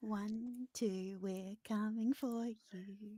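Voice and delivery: small, soft, hollow, echoey little voice. Player describing what a frightened man hears before vanishing, echoey little voice. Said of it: "this echoey little voice".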